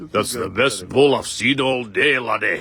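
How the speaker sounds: imitation Scottish accent. Asked to say the line in a Scottish accent, trying a Scottish accent. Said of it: "Do it in a Scottish accent".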